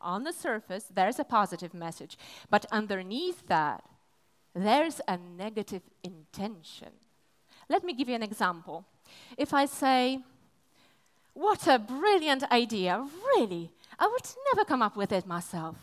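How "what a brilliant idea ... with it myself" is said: earnest, sincere, genuine, with no irony. Showing how a line sounds said sincerely: sincere compliment. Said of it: "It's a pure compliment".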